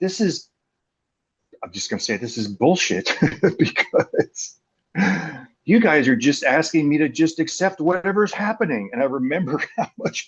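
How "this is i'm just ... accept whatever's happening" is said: seething, fed-up, pitched-up fuming rant. Recalling sitting in a group, the speaker acts out their past self fuming. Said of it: "just sitting there kind of fuming".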